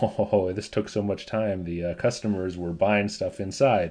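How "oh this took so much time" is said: plain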